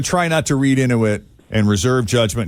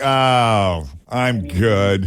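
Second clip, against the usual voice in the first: mock grudging irritation with drawn-out "oh"; 2 semitones lower than usual. Retelling the caller's answer, imitating someone's annoyed tone. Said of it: "your tone changed when we told you who we were".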